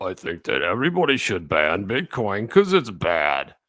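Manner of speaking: low, swooping, lecturing professor voice. Acting out Professor Duffy answering what he thinks, use a Professor Duffy academia voice. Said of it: "that academia voice".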